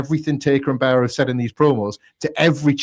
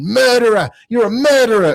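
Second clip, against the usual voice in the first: shrill, high, raised screaming; 9 semitones higher, 5 dB louder than usual. Retelling a brawl where one man screams at another: imitating someone screaming. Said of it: "is just screaming".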